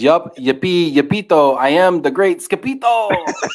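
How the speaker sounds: put-on Mexican accent, words stretched slow. Quoting what he says, in a put-on mexican accent. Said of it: "a Mexican accent".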